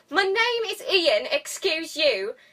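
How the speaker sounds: high, put-on upper-class British accent. Recapping how the intern keeps getting offended at his title, in a posh British accent as Ian. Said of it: "Except all posh".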